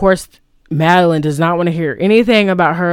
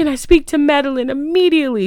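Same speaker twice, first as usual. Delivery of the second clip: put-on, very upset, high, urgent distressed voice; 9 semitones higher than usual. Retelling a film scene of practicing at a vanity: imitating Helen's fake distressed voice. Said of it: "Or she just says".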